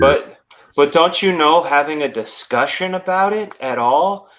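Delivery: heavy, mocking sarcasm laid on thick. In a discussion about oppression and lowered standards, voicing the opposing claim with heavy sarcasm. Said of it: "I say that with all the sarcasm I can muster".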